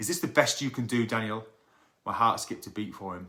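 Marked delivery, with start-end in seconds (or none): 0.0-1.4 put-on harsh barking tone. Retelling a teacher calling out a pupil during feedback, retelling a harsh bark. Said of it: "he barked in his harsh rhetorical tone".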